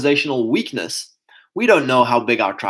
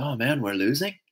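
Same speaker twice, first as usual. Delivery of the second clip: soft, quiet, dejected groan. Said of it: "And it's like".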